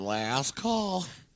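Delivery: camp, flamboyant, showy way of talking. Imitating him calling last call: imitating a flamboyant accent.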